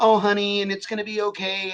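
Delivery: high, sugary, all-nice comforting sympathetic tone. Mocking supportive replies to a sad Facebook post: imitating people being all nice. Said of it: "they're being all nice and shit".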